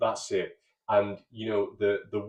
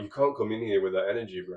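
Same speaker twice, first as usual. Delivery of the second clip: put-on sarcastic, standoffish, aloof tone. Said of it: "he's equally, like, sarcastic and standoffish".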